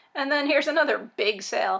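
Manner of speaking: dry, ironic tone. Calling a four-dollar sale a big sale: sarcastic. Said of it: "I'm being sarcastic".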